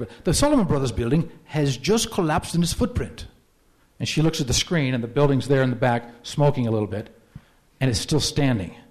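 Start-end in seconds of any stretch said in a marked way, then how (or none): 0.0-3.3 clumsy, poor put-on English accent in newsreader style. Quoting a BBC reporter's TV broadcast, in a bad English accent. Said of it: "my English accent's not very good".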